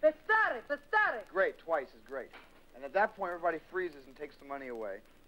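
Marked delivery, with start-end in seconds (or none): 0.0-1.2 shrill, very high yelled scream. Coaching others to scream the word to stop them, screaming it out. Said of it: "scream that out because".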